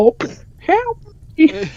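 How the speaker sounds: very high-pitched, swooping Texan voice. Retelling a short bandit calling out for help: imitating a high-pitched texan voice. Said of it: "has a really high-pitched Texan voice".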